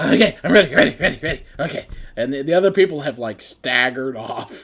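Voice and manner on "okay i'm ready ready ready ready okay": little hamster voice. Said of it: "the hamster's muttering to himself".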